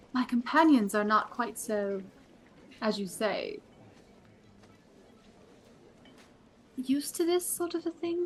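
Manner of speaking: secretive, confiding, conspiratorial half-whisper. A character leans in to speak about her companions: conspiratorial half-whisper. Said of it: "kind of whisper".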